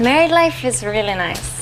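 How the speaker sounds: high-pitched Spanish accent. Talking about married life in a recorded clip: Spanish accent. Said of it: "Listen to her charming Spanish accent here".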